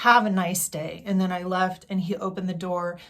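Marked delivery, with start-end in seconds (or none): 0.0-1.0 really loud, courteous, polite tone. Retelling a parting line to a man who upset them: retelling own loud remark. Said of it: "and I said it really loudly".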